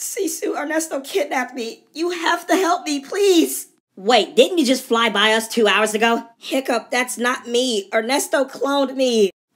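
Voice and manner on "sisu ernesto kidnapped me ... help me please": voice full of crying, high and pleading. Ember answers Sisu, who asks why she is crying; Ember crying. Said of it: "Why are you crying?".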